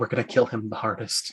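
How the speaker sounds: rushed, hushed, very quiet fast whisper. Playing a character who whispers a plan to another character: whispering. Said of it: "I whispered the Pottle".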